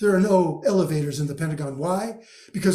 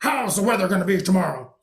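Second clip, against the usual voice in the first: gruff delivery; 3 semitones higher than usual. Acting out Groves catching sight of the resident meteorologist at the tower, use a gruff Groves voice. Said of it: "in his typical gruff voice".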